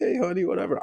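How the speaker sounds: very high, chirpy, bright, breezy voice. Explaining how they match each person's way of talking, speaker imitates Kathy. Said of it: "Kathy talking to me like".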